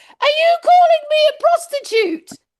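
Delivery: very high, loud, outraged, indignant yell. Retelling what she shouted once over her shock: retelling a loud shout. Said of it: "I shouted really loudly".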